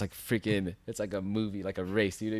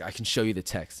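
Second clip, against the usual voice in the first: ordinary talk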